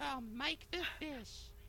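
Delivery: high, girly put-on voice. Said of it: "use, like, a girly voice for that".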